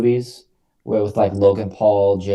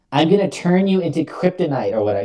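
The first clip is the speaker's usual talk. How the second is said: put-on high, weird, dorky nerdy voice; 8 semitones higher than usual. Retelling what an imposing-looking man said when he opened his mouth, weird nerdy voice. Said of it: "He just had this weird nerdy voice".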